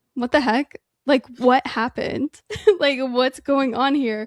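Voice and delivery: acted upset, bewildered tone. Speaker recounts a favorite funny scene, acting out upset bewilderment. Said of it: "he's so upset that she didn't actually kill him".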